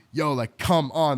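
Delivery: loud, drawn-out, exasperated frustrated yell. Speaker recalls pushing others on the show to go harder, retelling a yell. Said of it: "I'm like yelling like".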